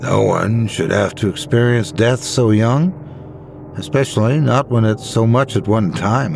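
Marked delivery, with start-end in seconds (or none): none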